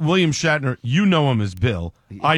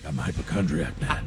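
whisper from the throat; 9 semitones lower, 9 dB quieter than usual. Brainstorming a hypochondriac character, showing how to say the line in a Batman voice. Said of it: "talk with like a Batman voice".

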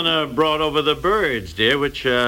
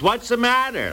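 loud, pitched-up voice; 9 semitones higher than usual. Speaker complaining that someone gave her the present, retelling a loud question. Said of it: "they say in a loud voice".

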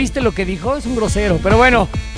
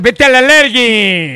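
sportscaster voice, louder and much slower; 4 dB louder than usual. Viewer repeats a phrase the way Perro Bermúdez would say it. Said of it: "Si lo dijera el perro Bermúdez, suena peor".

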